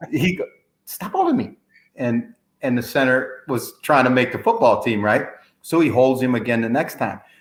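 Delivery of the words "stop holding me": squeaky little voice, very high pitched. Retelling a football player complaining about being held: Mike Tyson squeaky voice. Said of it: "His little squeaky voice".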